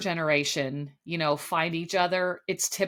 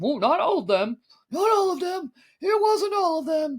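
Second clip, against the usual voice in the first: put-on very high-pitched old man voice; 10 semitones higher, 4 dB louder than usual. Speaker recapping a show moment with host Jesse Palmer, old man Mel voice. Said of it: "This is old man Mel talking".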